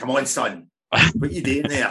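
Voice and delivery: acted-out loud shouting. Picturing a player's dad on the bench shouting at Reece, imitating a dad shouting. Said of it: "just shouting at Reece".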